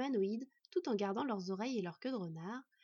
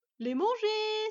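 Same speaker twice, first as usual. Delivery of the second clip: cheerful, eager, joyful voice, very high and loud; 10 semitones higher, 8 dB louder than usual. Murk answering what to do with them, joyful suggestion. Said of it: "suggéra joyeusement Murk".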